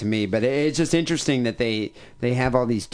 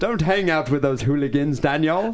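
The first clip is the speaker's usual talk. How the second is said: put-on British English accent; 3 semitones higher than usual. Riffing on a listener's name, the speaker calls out to him in an English accent. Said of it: "Nice accent".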